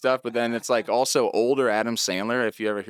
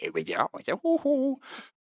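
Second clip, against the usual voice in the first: put-on very high, cooing, tiny baby talk. Showing an old comedy bit: Adam Sandler baby talk. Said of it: "doing the, the little baby talk".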